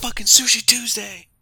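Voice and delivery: very high, shrill, full-throated, very loud scream. Retelling a man in the street screaming at his phone: imitating a man screaming. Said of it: "just screaming at his phone".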